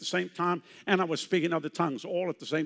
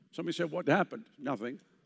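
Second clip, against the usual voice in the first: ordinary delivery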